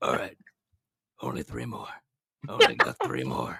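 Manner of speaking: raspy, rough, creaky male voice. Retelling what a loud man nearby kept saying to himself; impression of him. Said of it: "I'm about to do the impression of him".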